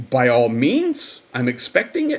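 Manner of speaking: put-on South African accent, sing-song. Retelling how Ma Rose answered a request to do live streams: Ma Rose's South African accent. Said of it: "this is what she said in her South African accent".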